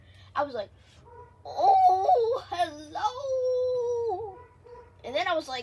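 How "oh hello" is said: very high, put-on old man voice. Retelling pretending to be an old man, talking in an old man voice. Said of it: "I was talking like it".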